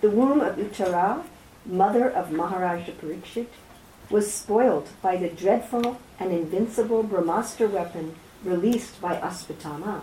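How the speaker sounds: plain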